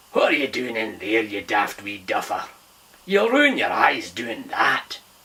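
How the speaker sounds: gruff, rough-edged voice. Narrator reads a voice interrupting Finn as he rereads a page: gruff voice. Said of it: "gruff voice".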